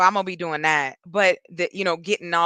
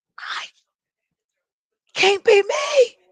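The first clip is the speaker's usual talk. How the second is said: very high, creepy, spooky clown voice; 4 dB louder than usual. Talking about making a decision after talks with family, suddenly in a Pennywise voice. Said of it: "Came out with the Pennywise voice".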